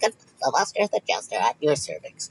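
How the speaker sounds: put-on helium-voice character. Retelling the voice used in the jester character after helium: imitating a helium voice. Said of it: "I just started doing that".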